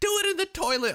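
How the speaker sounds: high, loud, dismissive mock voice, tossed off.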